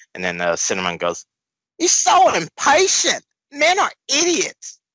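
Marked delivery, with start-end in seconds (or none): 1.8-4.7 very high, slow, with New York vowels. Reading a comic character's line aloud: New Yorker mixed with My Fair Lady voice. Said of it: "What voice was that?".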